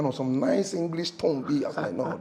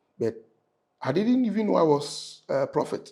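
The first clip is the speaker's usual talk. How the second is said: ordinary delivery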